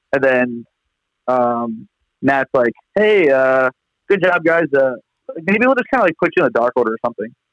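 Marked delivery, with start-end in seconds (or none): 2.9-7.2 very casual, nonchalant, offhand throwaway tone. Retelling how Matt offered to put them in a group: imitating Matt's nonchalant tone. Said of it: "that's how he says it".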